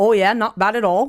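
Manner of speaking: loud, casual, put-on Canadian accent. Quoting a text reply received while watching wrestling, in a canadian accent. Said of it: "I read that in a Canadian accent".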